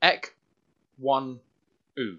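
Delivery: name broken slowly into separate syllables. Sounding out a player's name on request: said slowly. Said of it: "Say it slow".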